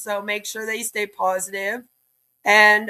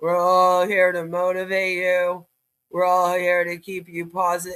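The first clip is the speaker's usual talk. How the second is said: mock dry, flat, lifeless monotone; 4 semitones lower than usual. Mocking a leader's speech from a video: imitating Jimmy's dry delivery. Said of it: "Pretty dry, Jimmy. He's like".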